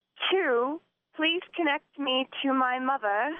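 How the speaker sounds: put-on British accent. A caller answers an automated phone menu that asks for a British accent. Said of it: "in British accent".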